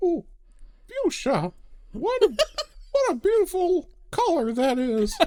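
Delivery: very high, performed put-on character voice. Asked to spell a word in a given style, answer with a Julia Child impression. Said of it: "In the style of Julia Child".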